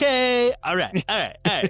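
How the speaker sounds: high-pitched, repeated looping filler verbal tic. Imitating a verbal habit of Quentin Tarantino: Quentin Tarantino impression. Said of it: "I cannot listen to Quentin Tarantino without hearing that".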